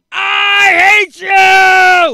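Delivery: very high, loud, furious angry shriek. Describing rage yoga, acting out what you shout: screaming in anger. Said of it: "you're screaming in public".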